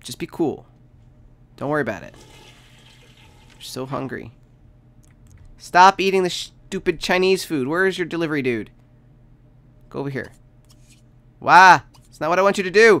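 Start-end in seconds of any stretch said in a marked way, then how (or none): 11.4-13.0 very loud, high, frantic panicked outburst. Playing a game and calling out to the characters on screen, panicking. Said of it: "I'm panicking!".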